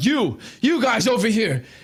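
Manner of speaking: high, calling yell. Voicing a character calling after departing players: yelling. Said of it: "Tyvor yelling".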